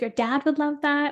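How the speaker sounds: ordinary delivery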